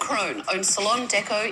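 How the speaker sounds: put-on Australian accent, very high and soft. Asked to do it one more time, you do an impression of the other speaker: put-on Australian accent. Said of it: "do an Australian accent".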